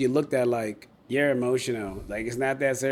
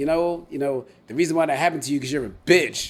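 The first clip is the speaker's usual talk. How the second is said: put-on angry voice, louder; 2 semitones higher, 4 dB louder than usual. Retelling what an ex said after a fight: imitating someone angry. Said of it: "I guess she got mad at me".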